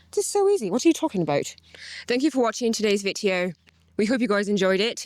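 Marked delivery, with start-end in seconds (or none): 2.0-5.0 attempted put-on British accent. Doing the video outro in an attempted British accent. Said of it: "then I'll do British".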